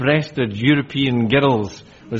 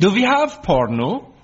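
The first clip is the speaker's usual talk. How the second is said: put-on Danish accent, pitched higher; 8 semitones higher than usual. Telling the story of a new au pair grabbing the remote: her best danish voice. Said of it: "said in her best Danish voice".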